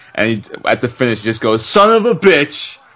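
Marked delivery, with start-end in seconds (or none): 1.7-2.8 hyped, pumped, very high and drawn-out. Retelling a commentator's call at a finish: hyped Stone Cold impression. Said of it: "just so hyped".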